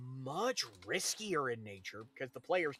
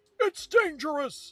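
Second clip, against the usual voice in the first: shrill, very loud, high announcer shout; 13 semitones higher, 11 dB louder than usual. Recalling a racing game's car select, imitating an announcer yelling. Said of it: "using exactly this tone".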